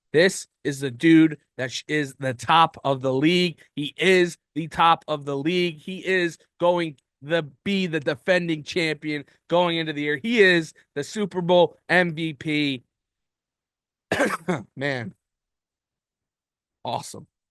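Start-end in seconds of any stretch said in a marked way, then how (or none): 10.3-17.3 choked-up voice catching with emotion. A host praising the Super Bowl MVP on an episode, getting choked up. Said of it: "I'm getting choked up here".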